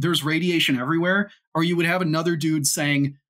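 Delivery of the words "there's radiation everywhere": ordinary delivery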